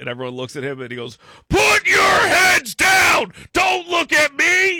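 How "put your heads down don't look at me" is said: drill sergeant screaming, shrill, very loud and high. Retelling a drill sergeant on the bus: imitating a drill sergeant screaming. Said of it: "starts screaming, screaming".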